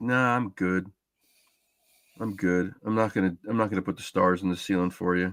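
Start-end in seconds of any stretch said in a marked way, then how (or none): none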